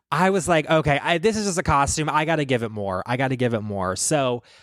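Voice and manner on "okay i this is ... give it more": ordinary delivery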